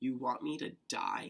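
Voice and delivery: acted, hurt, tearful voice, spoken through tears. Retelling what she said through her tears, imitating someone crying. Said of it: "through her tears".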